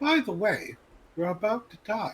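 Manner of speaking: British lady announcer voice. Suggesting a game update voice warning: imitating a British lady computer voice. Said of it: "the voice com-, of, of, like, the British lady".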